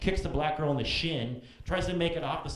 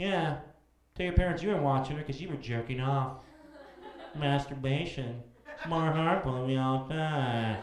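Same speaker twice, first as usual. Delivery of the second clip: put-on snide, sarcastic announcer voiceover; 2 semitones lower than usual. Making up a parody commercial: imitating a sarcastic voiceover. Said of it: "this sarcastic voiceover comes on and says".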